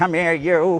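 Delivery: loud, high, barking slapstick-style voice. Asked to do a voice, showing the dad duck grabbing Huey, Curly impression. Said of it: "like he'd do Curly".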